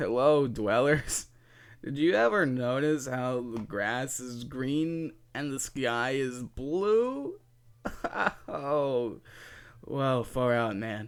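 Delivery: put-on stoned voice. Opening a video as a joke, pretending to be high. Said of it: "I am so freaking high right now".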